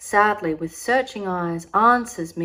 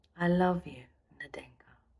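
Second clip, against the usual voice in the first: quiet, low, soft murmur; 2 semitones lower, 8 dB quieter than usual. On the rushing sled, the narrator speaks to Nadenka; low voice. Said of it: "I say in a low voice".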